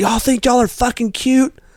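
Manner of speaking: very high woman's voice, screaming. Retelling how a lady started screaming at the speaker's group, imitating a lady screaming. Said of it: "this lady starts screaming".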